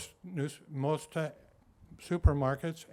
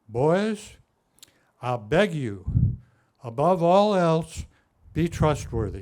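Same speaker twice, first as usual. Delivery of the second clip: put-on loud, slow, booming, drawn-out Tennessee accent; 10 dB louder than usual. Quoting a man from Tennessee advising boys, deep Tennessee accent. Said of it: "He was from Tennessee, and he had a deep voice, and he talked kind of funny... pardon me, I'm not good at this".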